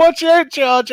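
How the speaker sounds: imitated shouting voice. Recounting a race collision, the speaker quotes a rival's warning: retelling a shout. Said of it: "He shouted out".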